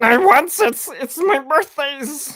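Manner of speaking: very high, very loud, shrill, stretched-out creature voice. Performing a line another speaker asks for: Gollum voice.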